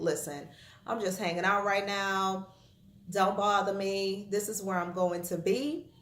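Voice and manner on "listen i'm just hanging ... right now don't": plain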